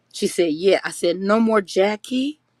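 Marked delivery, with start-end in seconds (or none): 1.2-2.3 put-on babyish little-kid voice. Retelling a conversation with a woman outside the building, talking like a baby. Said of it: "I was talking like a baby".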